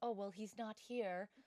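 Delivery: normal talking voice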